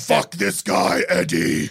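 slow, low, rough, creaky menacing voice. Imagining Venom talking to Eddie: Tom Hardy's Venom voice. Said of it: "Tom Hardy's Venom being like".

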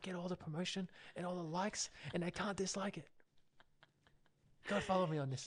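half-whispered throughout. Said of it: "You started whispering".

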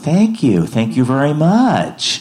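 fake woman's American twang. Queuing toward her, retelling her thanks to the people congratulating her, Catherine's American twang. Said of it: "she's got that kind of American twang".

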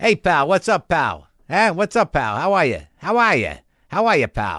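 put-on Boston accent. Mocking how someone talks, greeting a pal in a boston accent. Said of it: "that accent".

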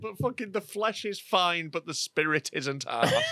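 words forced out while choking and coughing. Repeating a funny line after laughing and coughing: choking while talking. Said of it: "I'm just choking at the moment".

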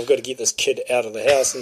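usual speaking voice

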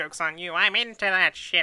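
high, loud cartoon villain voice. Joking about what a Dalek would say, voicing it in a Skeletor voice. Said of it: "the Dalek doing Skeletor voice thing".

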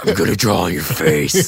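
very low, evil, demonic possessed-doll voice. Quoting a freaky doll from a story, creepy demonic voice. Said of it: "with a demonic voice, like".

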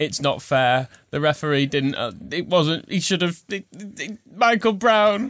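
put-on high, swooping sulky whine, stumbling over itself. Imitating a manager's complaint after defeat: mock whining about a referee. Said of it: "bottom lip quivering".

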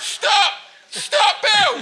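mock very high, shrill shout, as through a megaphone. Speaker retells chasing a man through Covent Garden, retelling a megaphone shout. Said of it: "through this megaphone".

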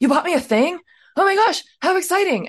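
mock very high, thrilled, gushing excitement. Retelling how a movie ends, imitating a character getting excited. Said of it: "then she gets a little excited".

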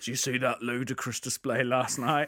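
put-on East London accent. Retelling a nerd character's football talk to the postman, in an EastEnders accent. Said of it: "he puts on this EastEnders accent where he goes".

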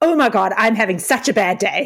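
mock irritated, exasperated, fed-up griping outburst. Retelling a failed demo injection's complaint: imitating someone pissed off. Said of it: "she got so pissed and she was like".

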